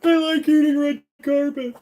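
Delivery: very high-pitched cartoon dad voice. Attempting a requested cartoon impression, slipping into a Homer Simpson voice. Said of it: "That was more Homer Simpson".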